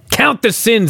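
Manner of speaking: mock unhinged, frenzied, high scream. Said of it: "he screams".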